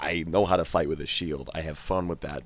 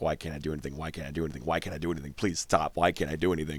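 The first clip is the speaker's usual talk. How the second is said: mock-panicked, acted-out panic in a younger voice. Speaker recalls being thirteen and acts out that panic: retelling own teenage panic. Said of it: "the 13-year-old me is panicking".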